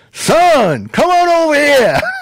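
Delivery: shrill, booming, very loud high yell, swooping, "son" drawn out. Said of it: "he yelled across the restaurant".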